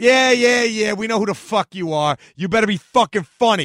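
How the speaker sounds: put-on heavy Bronx accent, laid on. Quoting a man who answers the speaker at a show, in a thick Bronx accent. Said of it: "had this thick bronx accent".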